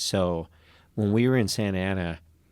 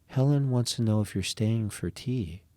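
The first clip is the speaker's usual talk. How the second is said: put-on creepy voice; 3 semitones higher than usual. Retelling what a woman said to him, the speaker imitates her creepy voice. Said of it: "she purposely made a creepy voice".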